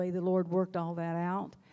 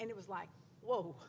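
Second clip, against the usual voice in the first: ordinary talk, nothing marked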